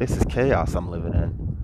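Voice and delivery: plain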